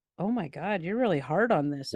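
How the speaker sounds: usual speaking voice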